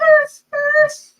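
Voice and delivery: very high, loud, frightened barking. Showing the different arfs practiced: scared arf. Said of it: "There's the scared arf".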